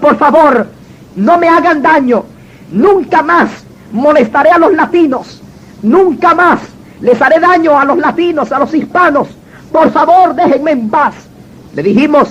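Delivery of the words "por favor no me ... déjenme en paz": normal talking voice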